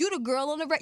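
high-pitched, angry, really aggressive and confrontational. Retelling a guy walking up to her at Gold Room: imitating Pete's aggressive tone. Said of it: "Just mad aggressive tone".

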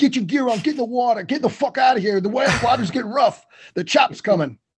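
put-on thick New Jersey accent. Retelling a boat trip, the speaker quotes one of the men in a thick Sopranos accent. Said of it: "has a very thick sort of Sopranos accent".

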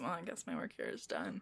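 quiet, barely voiced, breathy whispered mumble. Narrating a scene, a woman puts peas on her eye and speaks: quiet mumble. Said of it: "She mumbles it quietly".

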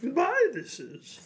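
shrill, very loud odd voice. Asked by a co-speaker to say goodbye at sign-off, do your best Yoda impression. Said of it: "That's pretty good".

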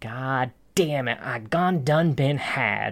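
attempted New York accent. Retelling a scene where a man realizes he was tricked, attempting a New York accent. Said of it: "I was really trying to say that with a New York accent".

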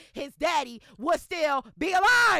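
high, loud, slow, emphatic shout.

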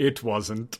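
storyteller-style narrator voiceover cutting in. Undercutting a player's claim that the car is going well, in a narrator voice. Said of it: "narrator voice".

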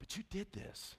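soft, hushed, very quiet whisper. Retelling daughters arguing while overheard through a door: whispering. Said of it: "I'm kinda whispering".

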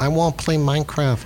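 put-on high-pitched small-child voice. Interviewer asking a seventh grader about a third grader, in a little kid voice. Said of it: "that's my best little kid voice".

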